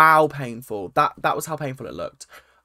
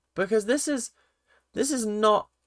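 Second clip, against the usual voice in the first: confused, incredulous tone. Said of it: "he's sitting there like".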